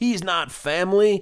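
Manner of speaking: very high, shrill shout. Retelling a scene where a father yells at a rival: imitating someone yelling. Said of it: "and he yells".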